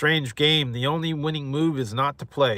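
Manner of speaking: usual speaking voice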